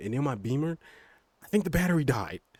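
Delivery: high, loud excited rant. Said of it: "Sorry, I'm getting really excited".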